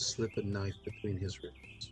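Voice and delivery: very soft, breathy, hushed, barely voiced whisper. Voicing a woman who pulls you closer and speaks to you, whispering. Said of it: "and she whispers to you".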